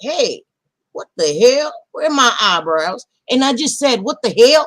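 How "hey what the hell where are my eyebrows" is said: put-on southern accent with a twang slipping out. Retelling a moment when a southern accent slipped out while talking, southern accent. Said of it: "a southern accent just came out".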